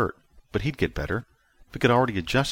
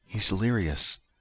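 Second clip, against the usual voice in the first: ordinary delivery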